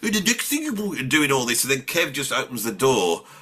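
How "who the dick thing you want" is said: pitched-up, full Brummie character voice. Retelling sitting in costume as Brummy Dave: Brummy Dave voice. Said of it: "I'm sat there going".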